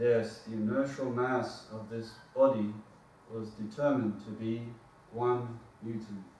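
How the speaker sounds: droning, unvaried, flat lecturer delivery. Speaker imitates a lecturer delivering a lecture, monotone lecturer. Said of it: "delivers it in a monotone".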